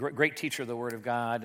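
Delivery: plain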